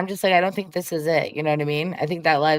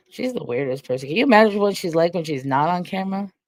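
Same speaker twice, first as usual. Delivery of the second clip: usual speaking voice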